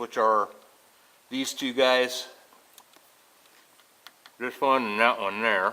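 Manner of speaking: talking with glasses in mouth. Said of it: "sorry if I'm talking weird".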